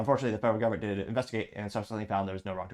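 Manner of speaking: deliberately way-too-fast, rushed, rattled-off delivery. Delivering a joke line on purpose, spoken way too fast. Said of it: "I spoke way too fast. That time on purpose".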